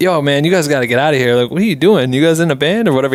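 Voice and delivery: put-on thick, heavy New York accent. Retelling a cop waking the band in their van, in a thick New York accent. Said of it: "He had like such a thick New York accent".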